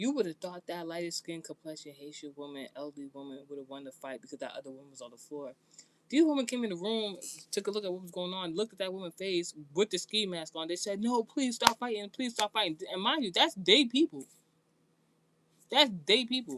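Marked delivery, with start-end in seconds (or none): 11.0-12.8 put-on high pleading, repeated over and over. Retelling how the women pleaded with the elderly woman: imitating someone pleading. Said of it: "They were pleading with her".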